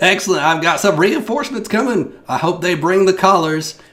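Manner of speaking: very high, shrill, loud piping call. Voicing an animal rescuer livestreaming from the woods: Jeannie's voice. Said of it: "she pipes up".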